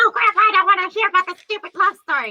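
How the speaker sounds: put-on whining child voice, very high-pitched and shrill. Retelling a scene from Princess Bride, imitating the little kid complaining. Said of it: "little Kung Pao kid just be all like".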